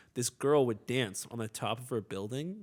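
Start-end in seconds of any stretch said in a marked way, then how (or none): none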